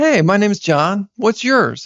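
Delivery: smiling while talking. Showing how to introduce yourself to women at an event, smiling while talking. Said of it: "My eyes got a little brighter".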